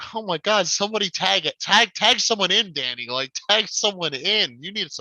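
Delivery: put-on pleading tone. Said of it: "I'm like".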